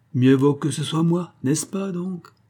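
dry and mocking. The servant retorts to a man's objection; sarcastic. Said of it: "riposta sarcastiquement la servante".

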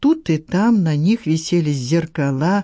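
ordinary delivery

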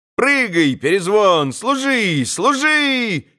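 slow, drawn-out calling out, Служи stretched long. Reading a novel aloud, voicing a character calling commands to a dog, yelling. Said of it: "Завопил Коля".

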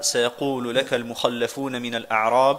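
normal talking voice

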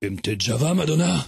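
put-on murmuring voice. Retelling what you murmured in a woman's ear, retelling a murmur in her ear. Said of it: "je lui murmurai à l'oreille".

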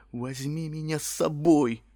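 imploring, earnest, begging, pleading tone. The first-person narrator, kneeling down, quietly pleads: quiet pleading. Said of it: "тихо взмолился я".

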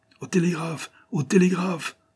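a crowd crying out at a very high pitch. The crowd gathered before the president cries out together. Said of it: "s'écria la foule".

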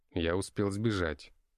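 ordinary delivery

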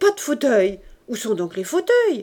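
loud, exclaiming cry. Reading a story, Cosette enters and finds the armchairs gone; exclaiming. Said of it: "s'écria Cosette".

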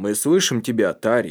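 plain reading voice

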